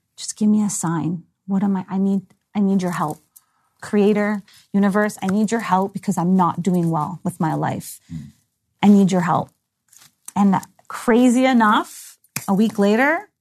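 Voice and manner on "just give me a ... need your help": tearful pleading through crying. Recounting crying on the balcony a week before the diagnosis, retelling a tearful plea. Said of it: "I'm crying and saying".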